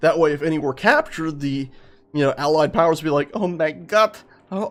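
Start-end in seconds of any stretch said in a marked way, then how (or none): 3.3-4.7 slow, put-on German accent, exclaiming. The speaker acts out Allied powers reacting to captured Germans, in a German accent. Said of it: "why am I doing German voice".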